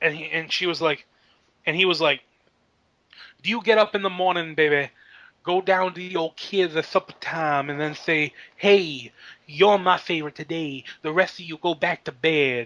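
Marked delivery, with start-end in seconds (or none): 3.4-12.7 put-on angry pro-wrestler voice. Retell the reply to what she had just said, imitating a pissed-off Dusty Rhodes. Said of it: "Dusty Rhodes looked like he was pissed".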